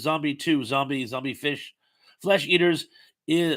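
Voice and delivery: ordinary talk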